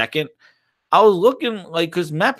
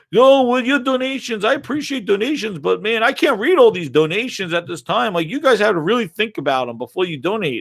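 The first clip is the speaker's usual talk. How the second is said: mock shouted delivery; 4 semitones higher than usual. Retelling a streamer answering donors: imitating someone yelling. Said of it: "he's yelling at them".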